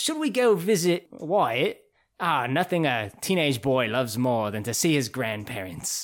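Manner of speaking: bad, clumsy, uptight put-on British accent. Recapping a show, voicing uptight British grandparents at dinner: bad British accent. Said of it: "Forgive my accent".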